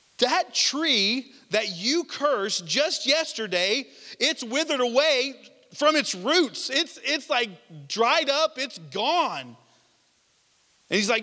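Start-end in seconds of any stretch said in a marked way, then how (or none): none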